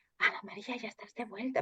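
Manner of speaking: whispered, barely voiced, very quiet. Retelling what a veterinarian said to her in the flat's kitchen, imitating a whisper. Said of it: "pero así susurrando".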